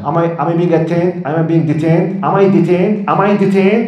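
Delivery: put-on combative, pushy, insistent, aggressive badgering tone. Acting out a driver stopped by a cop: imitating someone speaking aggressively. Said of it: "people who are speaking aggressively with cops".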